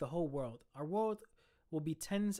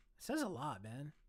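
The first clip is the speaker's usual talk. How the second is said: soft voice, breaking and cracking; 5 dB quieter than usual. Discussing feeling emotion that a character's betrothed is gone, voice cracking. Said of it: "Why did my voice just crack?".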